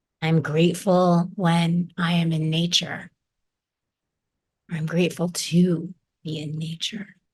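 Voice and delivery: ordinary talk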